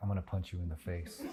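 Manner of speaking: hushed, menacing half-whisper, very quiet. Cooks recall threatening each other side by side while cooking; retelling a half-whispered threat. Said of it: "whispering like side by side".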